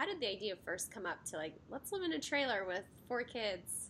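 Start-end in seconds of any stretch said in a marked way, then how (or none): none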